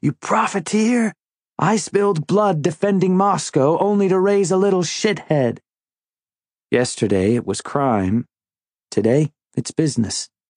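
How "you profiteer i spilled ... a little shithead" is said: high, furious, screaming rebuke. Retelling a father chasing with a belt: imitating a father screaming.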